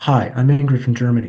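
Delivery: strong, firm, confident put-on delivery. Retelling the visitor's second introduction to the monk: imitating a strong, confident introduction. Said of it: "she was strong and strong and just went".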